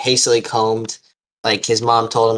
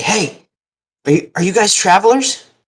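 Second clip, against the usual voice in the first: put-on very high small boy's voice, calling out; 10 semitones higher, 3 dB louder than usual. A storyteller voices a boy calling from the trees to travelers, young boy's voice. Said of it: "a boy's voice uh, from the trees say".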